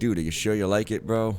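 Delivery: ordinary delivery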